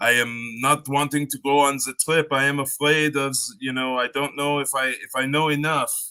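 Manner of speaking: put-on very poor French accent. Retelling an insecure man's phone call before a trip: very poor french accent. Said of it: "that's my very poor French accent".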